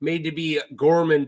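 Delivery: plain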